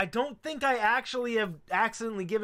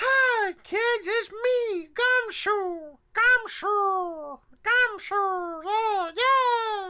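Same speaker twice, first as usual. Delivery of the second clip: very high, very slow voice, yay drawn out; 13 semitones higher, 5 dB louder than usual. Showing how Gumshoe would sound voiced like Elmo. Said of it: "give Gumshoe the voice of Elmo".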